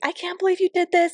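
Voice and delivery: very high, overjoyed, excited disbelief. Retelling how he reacted to his birthday surprise at Disney, imitating someone freaking out. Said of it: "he was like freaking out".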